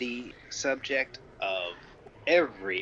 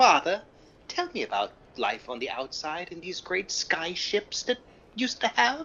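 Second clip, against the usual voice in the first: put-on old-fashioned, quaint, old-timey voice, pitched up; 6 semitones higher than usual. Father quotes his son asking him a question, old-timey voice. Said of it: "give him an old-timey voice".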